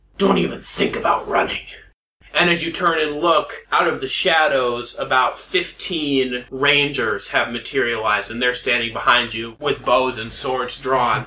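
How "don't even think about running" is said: rough, gruff voice. Narrating a game, voice an unseen figure behind the listener warning them: gruff voice. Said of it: "you hear a gruff voice say".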